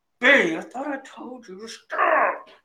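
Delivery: words pushed through clenched, gritted teeth. Describing a woman they fear, speaker imitates her talking through gritted teeth. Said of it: "talk through her teeth like".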